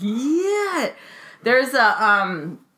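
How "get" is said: shrill, very high, stretched-out, drawn-out furious yell.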